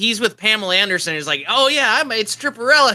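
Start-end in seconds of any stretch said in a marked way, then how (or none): 1.5-3.0 high, thrilled, giddy showman boasting, acted. Retelling Stan Lee standing with Pamela Anderson in an ad: imitating excited Stan Lee. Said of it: "really excited".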